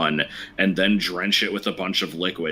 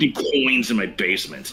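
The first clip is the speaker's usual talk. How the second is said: swooping pitch with heavy stress on "coins"; 4 semitones higher than usual. Quoting a stand-up bit the way the comedian says it: Dane Cook impression, stress on COINS. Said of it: "he puts a lot of emphasis on the word coins".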